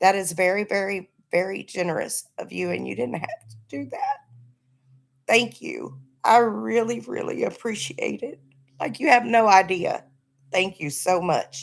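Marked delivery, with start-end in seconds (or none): 2.7-11.6 emotional, earnest delivery, full of feeling. Thanking someone for a birthday gift sent on Cash App, getting emotional. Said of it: "I'm getting emotional".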